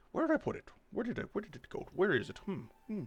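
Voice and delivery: put-on very high old owl voice, mumbled under the breath. Voicing a giant owl searching the room: owl mumbling under his breath. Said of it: "he mumbles under his breath".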